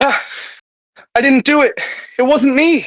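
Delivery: very high-pitched pleading, begging voice. A game master voices a startled figure tapped on the shoulder, pleading. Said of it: "sense motive his pleading".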